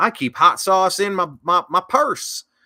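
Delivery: put-on Southern accent. Mocking a campaign line as pandering: Hillary Clinton deep Southern drawl impression. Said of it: "she goes into a deep Southern drawl".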